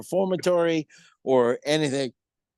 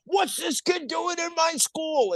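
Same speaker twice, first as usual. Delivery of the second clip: very high, shrill screaming outburst. Retelling being spotted in the hall, imitating Walter J. Degnan screaming. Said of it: "screaming at me and screaming at".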